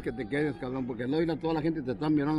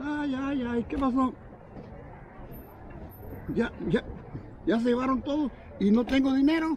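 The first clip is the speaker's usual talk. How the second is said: put-on, very high-pitched distressed cry, woman's shout; 11 semitones higher than usual. Retelling a robbery, acting out a woman who started retelling a woman's shout. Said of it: "Empezó a gritar".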